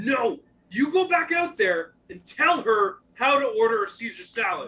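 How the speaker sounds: acted, very loud, high, furious angry-chef yell. Retelling what a chef said: imitating an angry chef. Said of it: "typical just angry chef".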